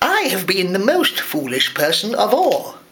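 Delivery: ordinary delivery, nothing marked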